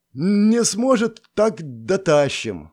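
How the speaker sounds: drowsy, half-awake voice, pitched slightly high. A man answers from the neighbouring bunk about a pale comrade: sleepy voice. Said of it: "сонным голосом отозвался Орсон".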